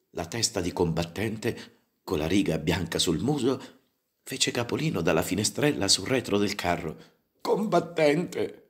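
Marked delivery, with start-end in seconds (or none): 7.4-8.4 high cry full of anguish. Reading a story, a character calling out to another: anguished cry. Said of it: "esclamò Trifoglina con voce angosciata".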